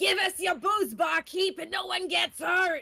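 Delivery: very loud, high, gravelly goblin voice. Narrator voicing a space goblin at the bar, gravelly goblin voice. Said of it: "one demanding in a gravelly voice".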